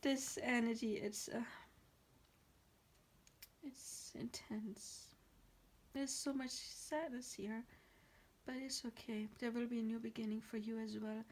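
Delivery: voice holding back tears, trying not to cry. Speaking to listeners about an intense, sad energy while holding back tears. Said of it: "I'm trying not to cry".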